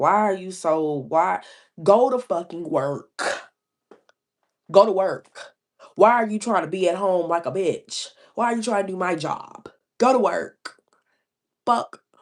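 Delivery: put-on combative, ranting outburst, mock aggression. Recalling when they first had their child with the baby daddy, retelling a combative rant. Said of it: "being unnecessarily combative".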